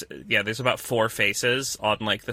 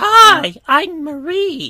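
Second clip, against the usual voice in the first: put-on very high, loud, sing-song baby-doll voice; 13 dB louder than usual. Describing a game's talking baby-doll enemy, do Marie's baby voice. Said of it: "she's doing a baby voice".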